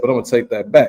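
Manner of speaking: normal talking voice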